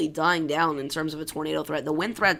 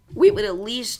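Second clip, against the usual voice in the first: loud voice crack, breaking and jumping high; 7 semitones higher, 8 dB louder than usual. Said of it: "that was a horrible voice crack".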